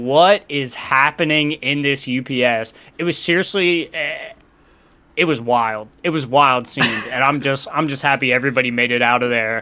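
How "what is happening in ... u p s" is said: ordinary talk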